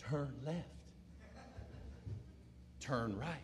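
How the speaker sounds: sweet sat-nav voice, barely above a whisper. Imitating a car GPS giving directions: nice sweet GPS lady voice. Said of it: "this nice, sweet voice".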